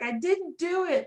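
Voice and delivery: put-on very drawn-out, sorrowful child voice, high and slow. Retelling a kid in trouble in the Polar Express film, imitating a sad child. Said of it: "just the sadness in this poor child's voice".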